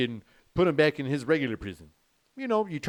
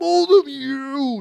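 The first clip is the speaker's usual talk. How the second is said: put-on very high, ragged, rough drunken yelling; 11 semitones higher, 8 dB louder than usual. Retelling a drunk man yelling at the police, imitating a drunk man yelling. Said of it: "That's my trying to be his drunk voice".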